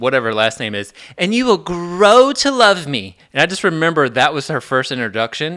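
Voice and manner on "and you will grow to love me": put-on theatrical, animated delivery, higher and louder. Retelling a classmate's first class introduction: imitating Stacy's theatrical introduction. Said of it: "very, like, theatrical and animated".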